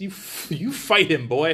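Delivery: put-on grumpy, cranky old man voice. Speaker recounting the scene where Frank speaks to Harry; grumpy cranky old man voice as Frank. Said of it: "I just hear grumpy, cranky old man voice".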